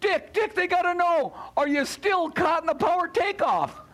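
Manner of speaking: high screaming from a distance. Retelling being caught in the power takeoff, imitating Mary screaming at him. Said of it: "she's screaming at me".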